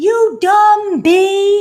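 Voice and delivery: screeching, shrill, very high-pitched scream. Retelling a woman at a gas station swearing: imitating someone screaming. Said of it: "swearing at me, screaming though".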